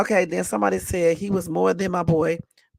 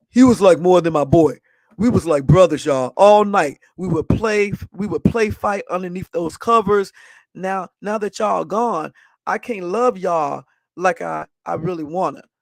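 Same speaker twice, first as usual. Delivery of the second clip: voice pushed down on purpose, put-on deeper; 3 dB louder than usual. Speaker retries the lines, trying to sound less girlish: put-on deeper voice. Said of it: "see if I can do it a little bit deeper".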